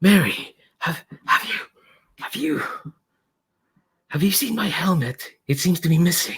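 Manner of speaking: high, slow disguised voice. On a phone call, Stalwart disguises their voice to ask Mary: Stalwart's half-whispery disguised voice. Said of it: "It's quite whispery".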